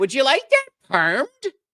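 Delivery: put-on Buffalo-style accent. Imitating a waitress at an Italian restaurant, in a weird Buffalo accent. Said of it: "with that weird accent".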